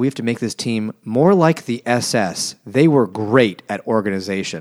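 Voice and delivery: ordinary talk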